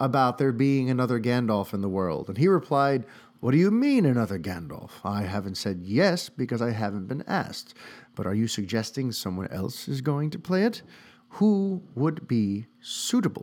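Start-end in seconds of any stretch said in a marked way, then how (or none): 3.4-13.4 attempted, put-on British accent, slipped into. Quoting a man's reply to a question, in an attempted British accent. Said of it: "I don't know why I'm even attempting to do a British accent".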